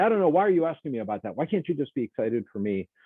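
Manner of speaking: acted irritability. Describing symptoms, acting out someone quickly turning irritable. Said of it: "move really quickly into a state of irritability".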